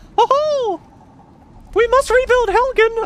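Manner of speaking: tiny, very high, heroic put-on voice. Recalling a line voiced for a game character, in a little voice. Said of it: "there's my little voice coming out".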